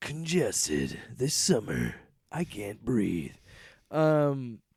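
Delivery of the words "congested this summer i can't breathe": film trailer announcer delivery. Joking about being congested, in a movie trailer voice. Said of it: "like a movie trailer voice".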